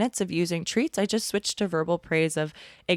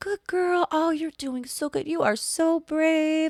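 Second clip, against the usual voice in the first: put-on, very high-pitched, soothing and encouraging tone; 10 semitones higher than usual. Retelling how the speaker talked her through a scary walk, retelling a soft praising tone. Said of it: "this tone like helps soften them".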